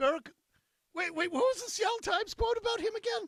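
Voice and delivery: squeaky, very high, rising as it goes. Asking what a newspaper quote said, voice gone squeaky. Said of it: "my voice got so squeaky".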